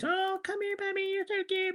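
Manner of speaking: put-on very high, gentle, soft baby talk. Retelling how four people in the office talked to a dog, imitating a high-pitched voice. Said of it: "They crouched in high pitched voice".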